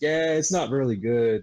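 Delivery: put-on deflated, disappointed, disheartened tone. Retelling how a friend reacted after the game came out: imitating Dan sounding disheartened. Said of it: "he's just so disheartened".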